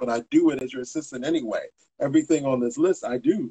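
normal talking voice

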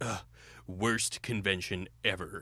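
heavy put-on fat voice, slow and drawn-out. Imitating the comic book guy's catchphrase: Comic Book Guy voice. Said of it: "isn't the comic book guy just like".

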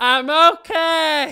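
mock very high, very loud slurring. Recalling a girl driving past in a go-kart, imitating her slurring. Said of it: "driving past in the go-kart slurring".

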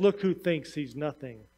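very low, smug, self-satisfied murmured aside. Telling a story where the pastor nudges the worship leader, mock-smug remark. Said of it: "smugly says".

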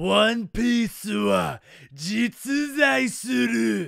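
very slow rough voice. Saying a One Piece line in Japanese in a Whitebeard voice. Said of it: "I said the word One Piece in a Whitebeard voice".

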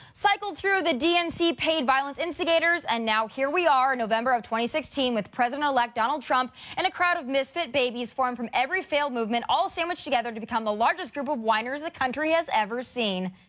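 plain

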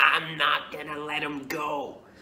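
strange, possessed, otherworldly demonic voice. Recalling a spirit taking over and speaking through them, in a demonic strange voice. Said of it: "I spoke in a very demonic, strange voice".

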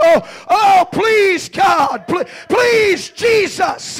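put-on very slow, high, drawn-out desperate crying. Acting out a mother crying over a dying child: imitating a desperate mother's cry. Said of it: "somewhere in the desperation voice".

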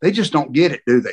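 whispered. Retelling what a security guard said while fans jeered: imitating a whisper. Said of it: "he whispers".

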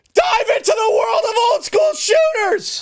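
very high, over-the-top, shrill put-on yell. Reading a game's description aloud to the other player: put-on yelling. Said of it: "no need to yell".

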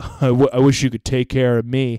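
ordinary talk

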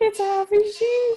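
high, loud, delighted squeal.

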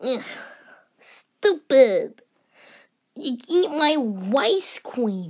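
put-on whiny, babyish little-kid toddler voice. Arguing on Halloween with someone who refuses the offer; toddler voice. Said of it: "Why do you talk like a toddler?".

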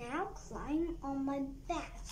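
usual speaking voice

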